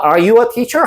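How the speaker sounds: question-like rising tune on teacher. English lesson on yes-no questions: rising at the end on teacher. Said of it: "하고 올라가면".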